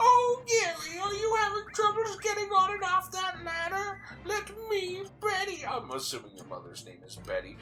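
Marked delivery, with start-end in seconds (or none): 0.0-4.0 poorly done put-on motherly voice, pitched much higher. Imagining the listener's mother speaking, doing an impression of the listener's mother. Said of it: "That was a terrible impression of your mother".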